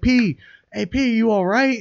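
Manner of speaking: very high, slow, drawn-out shouted call. Retelling yelling at a man shaking on the ground: retelling a yell. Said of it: "I'm yelling at him. I'm like".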